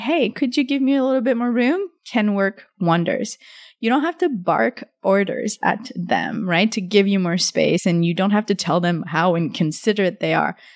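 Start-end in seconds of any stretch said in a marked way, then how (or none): 0.0-1.9 warm-hearted, friendly voice, lightly raised pitch. Demonstrating how to ask someone for more personal space, in a friendly voice. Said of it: "So in a friendly voice".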